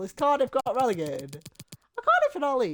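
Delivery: voice cracking. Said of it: "sorry, the voice crack".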